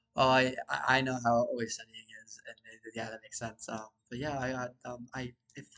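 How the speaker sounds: ordinary delivery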